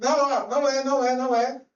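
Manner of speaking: play-acted urgent, loud, drawn-out shout. Retelling a police stop of the wrong car: retelling own past shout. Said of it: "aí você grita".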